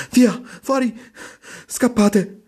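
very high, shrill, panicked and terrified screaming. A young half-orc warns everyone to run, screaming in terror. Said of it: "Urlò terrorizzato".

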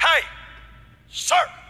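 high, loud, very authoritative call. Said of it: "I hear her get very authoritative".

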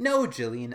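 loud, slow, drawn-out, fed-up, annoyed tone. Retelling a scene where Connie answers Julian: imitating Connie sounding annoyed. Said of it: "she sounds really annoyed as she's like".

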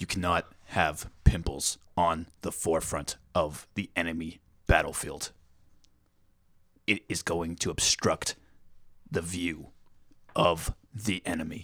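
deep, slow, weighty cadence with deliberate pauses. Trying the impression again with a deeper voice: Jocko Willink impression. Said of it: "more deep sound to my voice".

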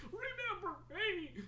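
high, soft, needy, clingy computer program voice. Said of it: "Steam's all like".

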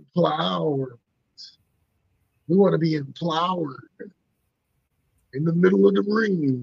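put-on wrestling ring announcer style promo voice. Trying to sound like Triple H about empowerment: Triple H voice. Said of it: "I'm trying to sound like Triple H".

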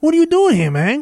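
put-on Cuban accent. Retelling what a character from the show says: stereotypical cuban accent. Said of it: "It is a stereotypical Cuban accent".

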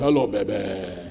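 deep baritone, soft and very low. Quoting a man's greeting, in a baritone voice. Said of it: "He speaks with a baritone voice".

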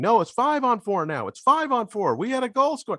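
shrill, very high, frantic, beside-themselves screaming. Retelling the scored-on team's protest at the refs: imitating people screaming. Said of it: "They're screaming".

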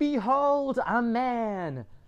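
put-on high screech, "man" drawn out long. Telling the story of Diogenes bursting into Plato's academy, screeching. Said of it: "starts screeching".

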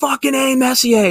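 play-acted high-pitched screaming yell. Recalling going to bed early as a kid, imitating dad screaming. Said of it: "I'd hear my dad just start screaming".

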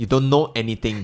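ordinary delivery

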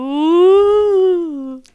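slow, eerie ghost moan. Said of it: "I sounded like an actual ghost".

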